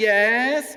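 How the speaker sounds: bright, full, high, loud, eager. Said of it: "Like this".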